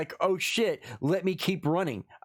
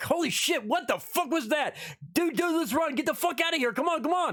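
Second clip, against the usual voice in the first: very high, scrambling, frantic freaked-out panic; 10 semitones higher than usual. Acting out own reaction to seeing something: mock panicked reaction. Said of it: "I'd be reacting".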